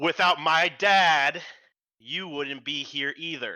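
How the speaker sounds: booming, thunderous, very loud and high voice. Player's character casts a spell, takes off a disguise and addresses the others, booming voice. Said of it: "like booming voice".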